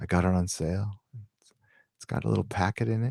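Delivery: hushed, low-pitched ASMR-style voice. Quoting a woman showing off DVDs, in ASMR voice. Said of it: "in A-S-M-R voice".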